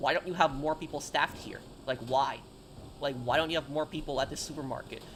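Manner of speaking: ordinary delivery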